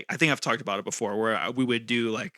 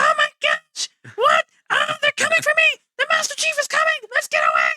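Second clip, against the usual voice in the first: very high, loud, swooping shrieking creature voice; 9 dB louder than usual. Describing a game's translated alien dialogue, Grunt voice. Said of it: "the grunts have a higher pitch".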